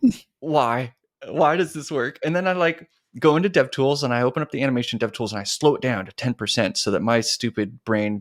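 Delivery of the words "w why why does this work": put-on astonished gasp, higher pitch. Retelling own reaction to a working fix: retelling own astonished gasp.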